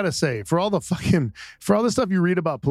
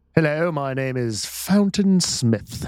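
put-on regal, stately voice. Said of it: "That sounds very regal".

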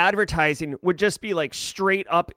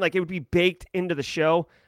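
usual speaking voice

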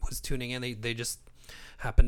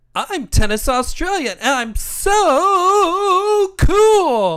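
way-up booming voice, loud and slow, long "so"; 13 dB louder than usual. Redoing a player's impersonation after being urged to: Tennis Australia impression. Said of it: "what he felt was an impersonation of Tennis Australia".

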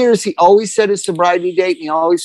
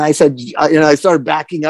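ordinary talk

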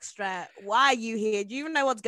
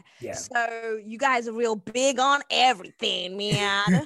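put-on American accent; 4 dB louder than usual. A British speaker, talking about Americans, addresses them directly: Bugsy Malone accent. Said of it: "What accent is that?".

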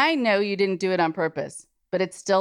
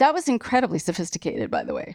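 ordinary talk

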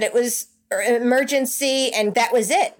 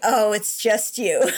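put-on disappointed, let-down tone; 2 semitones lower than usual. Retelling a sister's reply on the phone: imitating sister's disappointed reply. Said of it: "you could hear it in her voice".

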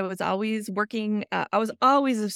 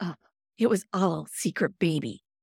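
put-on sigh while speaking, lower pitch; 4 semitones lower than usual. Retelling what a husband said leaning on the door: imitating a sigh while speaking. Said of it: "he leans against the door and he sighs".

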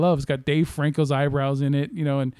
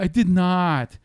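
put-on French-accented English, higher pitch; 3 semitones higher than usual. Quoting a scene the kids keep repeating: Tommy Wiseau impression. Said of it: "I can do his voice when I'm actually listening to Tommy Wiseau".

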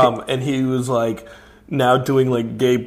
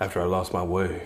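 low, soft, hushed grave voice. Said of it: "He's like".

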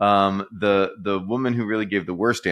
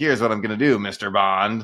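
put-on supervillain voice. Retelling an activist's big spiel of his master plan: mock supervillain voice. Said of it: "dressed up to sound like a supervillain".

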